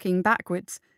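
ordinary delivery, nothing marked

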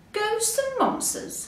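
very high, astonished, surprised exclamation. Hare hears his friends say the wood is full of monsters, surprised.

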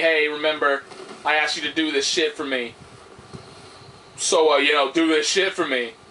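usual speaking voice

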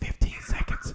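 soft whispered delivery.

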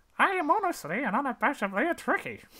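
very high cartoon frog voice. Reading an alien insult aloud while trying an impression, in a Kermit the Frog-like voice. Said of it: "You sound like Kermit the Frog".

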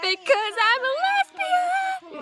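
mock very high-pitched voice, slow.

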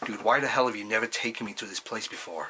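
clumsy, butchered, bad American accent. Retelling a friend's question about a hometown place: butchered american accent. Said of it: "I'm gonna really butcher an American accent here".

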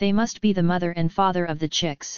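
ordinary delivery

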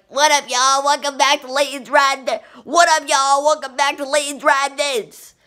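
put-on high, full-tilt hyped-up screaming. Comparing an old video intro to the new one: imitating own past screaming. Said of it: "I was, like, screaming".

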